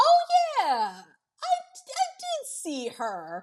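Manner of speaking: very high, very slow, fake casual nonchalance. Retelling a movie scene, quoting Norman lying: imitating a fake nonchalant tone. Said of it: "trying to still act, like, pretty nonchalant".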